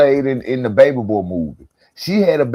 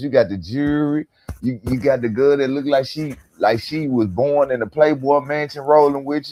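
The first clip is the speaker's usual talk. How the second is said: plain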